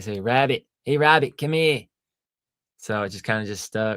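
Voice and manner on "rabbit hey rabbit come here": put-on Boston accent. Retelling how people pronounce a nickname: Boston accent. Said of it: "with that, uh, Boston accent".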